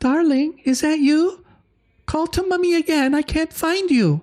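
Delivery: very high woman's voice calling from afar, echoing. Voicing a woman calling from deep within the chamber: woman's voice echoing. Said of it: "hear this woman's voice sort of echoing".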